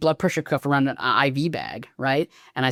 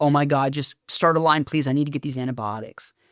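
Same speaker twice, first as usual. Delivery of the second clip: desperate, pleading, begging tone. Retelling how a patient asked for a line: imitating a patient begging. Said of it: "she's begging".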